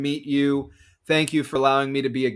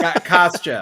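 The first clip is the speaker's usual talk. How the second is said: word repeated louder, voice raised; 3 semitones higher, 5 dB louder than usual. Repeating the name more loudly while others whisper to the leader: louder. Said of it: "like, louder".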